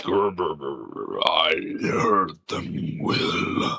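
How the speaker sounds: deepest possible bass voice, very low and very drawn-out. Quoting a voiced line of Vecna: imitating Vecna. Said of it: "I don't sound like him when I'm doing that".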